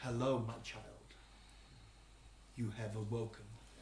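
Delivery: deep, low, hushed, all-encompassing voice. Game master voicing an omnipresent voice in the player's head, deep and low. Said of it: "omnipresent voice in your head, deep, low".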